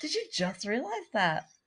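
high Irish-sounding lilt, rising at the end. Imitating another speaker's question: imitating an Irish-sounding voice. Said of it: "You go up every time".

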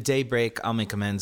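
usual speaking voice

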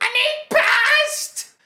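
put-on very high, very loud child's scream. Retelling a kid on a flight reaching the flight attendants' cart, imitating a kid screaming. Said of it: "she just screamed again".

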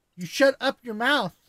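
put-on high, loud voice of a small girl. Retelling his daughter Claire bursting through the closet door, imitating Claire. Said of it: "the way you said it is her".

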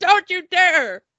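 high-pitched, loud yelling.

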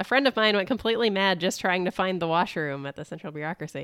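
ordinary talk, nothing marked

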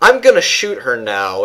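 put-on flat, deadpan voice. Quoting a character's lines from the series: deadpan Nova voice. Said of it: "with his deadpan voice".

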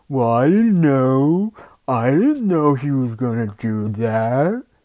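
loud, put-on dim-witted know-nothing voice. Imitating what people will say later, in a put-on dumb voice. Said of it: "that's my dumb voice".

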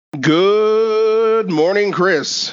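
cheerful, sunny, high voice, drawn-out "good". Podcast host greeting his co-host Chris at the show's start, happy. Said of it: "a happiness that seems to come through with that good morning".

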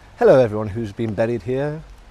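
loud, mock-posh upper-crust accent. Greeting everyone buried there in a put-on posh voice. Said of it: "Why have you got to do that voice? Because they're posh".

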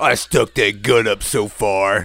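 loud, tough-guy biker-dude voice. Retelling what a man said, in a biker dude voice. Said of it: "he sounded like a biker dude ... Like this".

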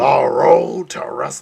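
rough, creaky, raspy voice, weak and fading. Doing a Vince voice for the other guests: best Vince voice. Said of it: "that's my best Vince voice".

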